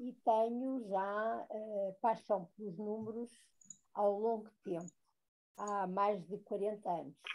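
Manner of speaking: very soft, distant-sounding voice.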